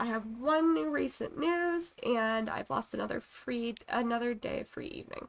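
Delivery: plain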